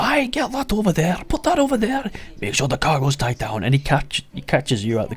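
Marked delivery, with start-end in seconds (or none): 0.0-3.6 very high, swooping, barking shouted delivery. Describing a ship captain busy on deck calling to his crew, Captain Moat shouting to crew. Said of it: "you just hear him shouting to his crew".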